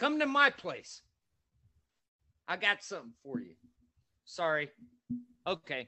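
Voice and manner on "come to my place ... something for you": shrill, booming, very slow, drawn-out furious yell. Ranting at Westboro Baptist Church members, daring them to come: angry. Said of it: "Sorry, it made me mad".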